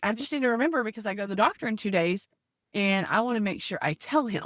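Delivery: plain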